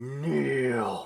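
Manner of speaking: booming, drawn-out voice echoing as in stone chamber. Staring down at you from across the chamber, a figure commands: booming, echoing voice. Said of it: "booms out this voice that echoes".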